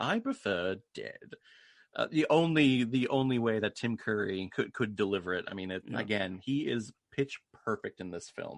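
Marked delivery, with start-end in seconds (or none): 0.0-1.3 put-on proper, professional tone, slower pace. Quoting the film villain's line after he collects himself and pauses, in a proper, professional Richelieu tone. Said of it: "that professional Richelieu tone".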